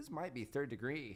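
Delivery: plain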